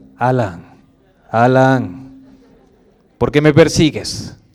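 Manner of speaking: very low, grave voice, name drawn out. Demonstrating the voice some people say calls to alan, deep and grave. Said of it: "Alan dice una voz grave".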